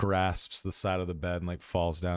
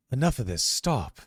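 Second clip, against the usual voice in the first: raised, high-pitched voice; 6 semitones higher, 4 dB louder than usual. Playing a character who interrupts an argument: raised voice. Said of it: "raises his voice and he says".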